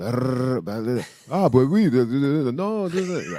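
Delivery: slow put-on French accent, babbling chatter. Imitating French people chatting over gas station coffee: mock French accent. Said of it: "Is that your French impersonation".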